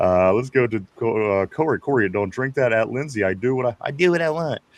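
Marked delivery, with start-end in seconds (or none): 3.8-4.6 put-on bratty cartoon kid voice. Reading out a line on a show, in the Cartman voice. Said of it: "He says it in the Cartman voice".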